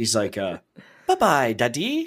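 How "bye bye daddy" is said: put-on child's British accent, higher pitched. Imitating a child picking up British television: imitating a child's British accent. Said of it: "watching too much British television".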